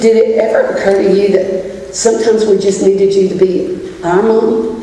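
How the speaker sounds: ordinary delivery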